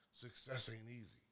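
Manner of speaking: very quiet, soft, faint hushed whisper. Retelling what he whispered to his tired son, whispering. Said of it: "I whispered to him".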